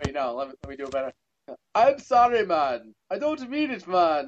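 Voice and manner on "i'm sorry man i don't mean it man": put-on Irish accent, higher and slower. Redoing an impression of James, use his Irish accent. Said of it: "with his Irish accent".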